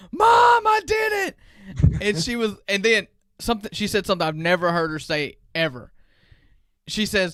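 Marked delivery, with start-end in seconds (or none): 0.2-1.4 put-on high, loud toddler-like screaming voice. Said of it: "screams to the top of her lungs".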